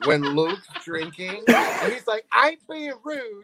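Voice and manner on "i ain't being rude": very high, weird put-on British Southern accent. Retelling what Luke says when drinking, Luke in weird British Southern accent. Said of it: "you turned weird British Southern".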